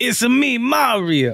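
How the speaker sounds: high Italian smoker's voice. Joking about the Super Mario movie's lead actor, a speaker mimics him, chain-smoking Italian Mario voice. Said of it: "He just come out straight chain smoking Italian voice".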